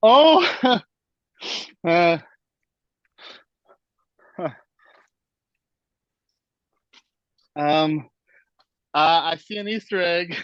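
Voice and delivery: voice shaking with emotion. Unpacking a bag of shirts, the speaker spots an Easter egg, emotional and shaking. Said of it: "I'm literally shaking".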